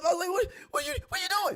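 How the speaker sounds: very high voice, shooting up, rising. Retelling confronting someone called sis who won't leave a man alone, retelling own voice going up. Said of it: "like my voice went up".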